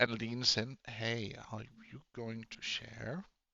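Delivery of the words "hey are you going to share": very hushed, low, quiet half-whisper. Narrating your sister leaning in close to your ear: half-whispering. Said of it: "She whispers".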